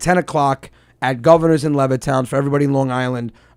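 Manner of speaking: ordinary talk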